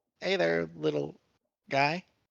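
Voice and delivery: hushed, soft, almost half-whispered voice. A player sneaking up on a little creature greets it, quiet, almost half-whispery. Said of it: "just kind of real quiet, like just kind of like whispery almost".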